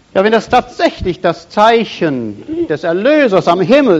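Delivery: normal talking voice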